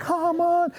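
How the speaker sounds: suddenly very high-pitched and sweet-sounding. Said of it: "Your voice got really high all of a sudden".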